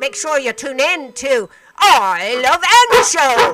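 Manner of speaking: very loud pirate voice. A radio host signs off, repeating the show reminder in a pirate voice. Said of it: "Let's see if I can say it like a pirate".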